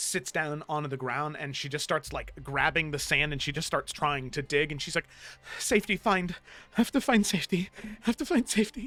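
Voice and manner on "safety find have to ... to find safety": breathing faster and faster, higher pitch. Acting a scene as a woman sinking to the ground, breathing faster and faster. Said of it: "begins to breathe faster and faster".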